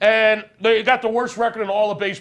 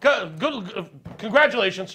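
stuttering, stammering speech. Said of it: "you're over there stuttering".

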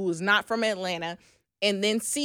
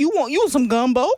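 sweet, raised, put-on New Orleans accent; 4 semitones higher, 6 dB louder than usual. Showing how people in New Orleans talk: imitating a New Orleans accent. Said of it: "New Orleans has a different type of sweetness".

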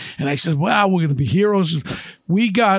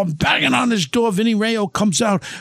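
usual speaking voice

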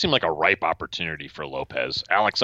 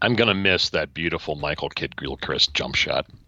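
plain

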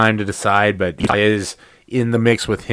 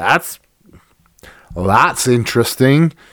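put-on pirate captain voice; 3 semitones higher than usual. Talking about NBA betting odds, the speaker comments in an extreme Jack Sparrow voice. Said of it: "in my extreme Jack Sparrow voice".

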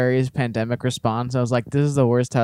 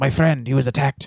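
imitated Irish accent. Retelling what he said on a press tour, after being asked to do the voice: imitating an irish accent. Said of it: "But it He's Irish, though".

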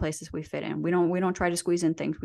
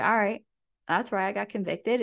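ordinary talk, nothing marked

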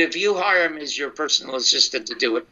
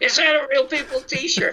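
mock scream, much higher pitch; 12 semitones higher than usual. Telling a story, you act out a woman screaming her question at a man, imitating a scream. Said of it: "And she screams".

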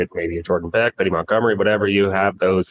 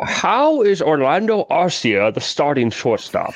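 slow, swooping, drawled Scottish accent; 8 semitones higher than usual. Asking a baseball question after being urged to do the accent: Sean Connery accent. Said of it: "Now there's the accent that we were looking for".

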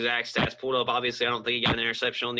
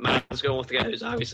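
voice cracking and breaking. Naming a pick for Offensive Player of the Year: voice cracking. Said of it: "my voice is cracked again".

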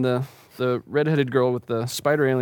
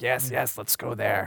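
tiny spider creature voice, quieter; 6 dB quieter than usual. Voicing the little spider thing heard in the players' minds during a game, little spider creature voice. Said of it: "You can hear the little spider thing's voice in your mind".

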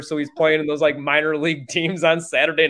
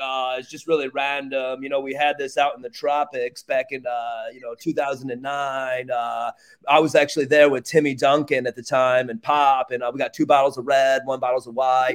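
goofy guy voice, meandering and rambling, full of ums and uhs; 3 semitones lower than usual. Imitating a guy ordering an off-menu bottle of wine: impression of Bud. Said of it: "Pretty good impression".

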